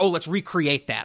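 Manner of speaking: usual speaking voice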